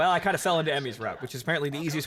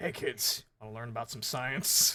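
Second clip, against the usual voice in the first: deep, throat-wrecked hero voice; 6 semitones lower, 7 dB quieter than usual. Speaker imitates how a player voiced a game character: a deep-voiced Batman impression. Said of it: "so throat cancer Batman".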